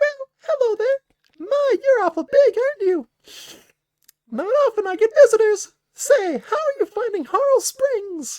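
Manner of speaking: very high, very loud, tiny squeaky sprite voice. Voicing a mischievous sprite greeting visitors, in a tiny sprite voice. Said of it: "That's my best tiny voice".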